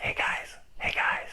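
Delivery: barely audible, very quiet whispered call. Retelling how she tries to wake two sleeping guys, reenacting a whisper. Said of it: "she just whispers".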